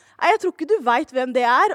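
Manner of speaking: ordinary talk, nothing marked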